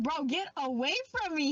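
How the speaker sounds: plain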